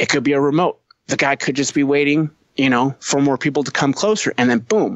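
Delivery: plain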